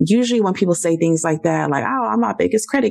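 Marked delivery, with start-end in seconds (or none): 1.8-2.9 thick mocking sarcasm with pitched-up voice. Showing how people usually say this kind of thing: very sarcastic. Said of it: "it's like very sarcastic".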